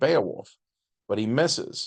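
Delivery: ordinary delivery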